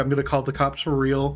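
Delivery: ordinary talk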